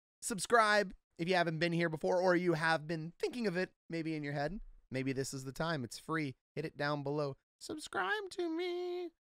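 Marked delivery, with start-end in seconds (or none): 7.6-9.1 very high, skin-crawling, icky, gross, creepy voice. Voicing the subscribe button talking to viewers, in a gross, creepy voice. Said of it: "That's the button talking to you in that gross, creepy voice".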